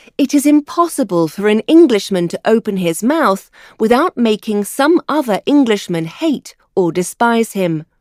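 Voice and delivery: ordinary talk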